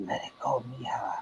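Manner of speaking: very hushed, soft, whispery man's murmur. Retelling a voice heard on a seance recorder: imitating a man's whispery voice. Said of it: "you hear a man's voice like this say".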